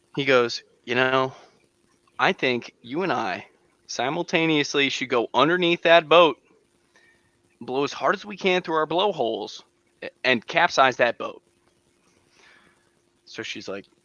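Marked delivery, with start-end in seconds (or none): none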